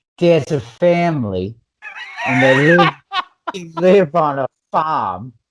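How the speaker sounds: put-on Boston accent. Re-explaining a movie plot after being asked to: Boston accent. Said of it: "but in a Boston accent?".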